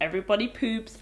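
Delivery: plain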